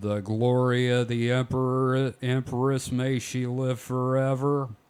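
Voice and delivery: put-on slow Texas drawl. Acting out a line by characters said to speak with a slow Texas drawl: John Wayne voice. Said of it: "It's just John Wayne talking".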